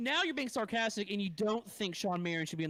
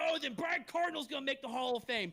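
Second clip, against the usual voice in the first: mock sarcastic tone, higher pitch; 5 semitones higher than usual. Imitating another speaker's remark during a debate: imitating a sarcastic remark. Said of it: "that's being sarcastic".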